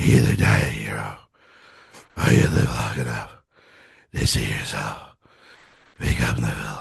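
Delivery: exhausted, very low, rough, completely spent voice. Quoting the hero exhausted at the end of the third act: exhausted Batman voice. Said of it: "where he's exhausted".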